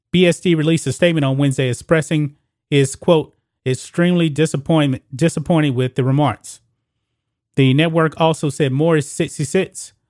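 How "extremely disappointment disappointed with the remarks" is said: ordinary talk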